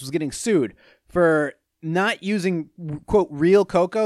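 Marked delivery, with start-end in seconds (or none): none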